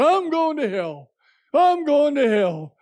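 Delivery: put-on loud yell. Retelling a college kid behind them on the grass, imitating a college kid yelling. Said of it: "one of them was yelling out loud".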